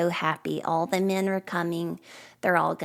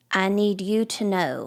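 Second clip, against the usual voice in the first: put-on stern tone; 3 semitones higher, 3 dB louder than usual. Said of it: "he gets real stern".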